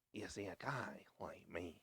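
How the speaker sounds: very quiet, breathy, barely voiced whisper. Quoting the interrogation scene: Heath Ledger Joker impression. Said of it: "You need to lick your lips more".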